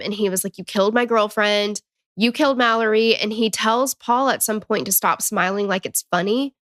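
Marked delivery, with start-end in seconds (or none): 0.6-3.2 mild, held-back mock accusatory screaming outburst. Retelling what a grieving man screamed at the driver: imitating someone screaming. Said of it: "screaming at him".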